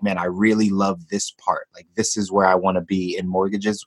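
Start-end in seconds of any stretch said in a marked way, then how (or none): none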